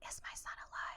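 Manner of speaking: breathy, barely audible whisper close to the ear. Retelling a scene where a character asks a question: imitating a whisper. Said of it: "whispers to him".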